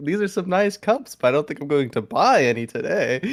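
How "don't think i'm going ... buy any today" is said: ordinary talk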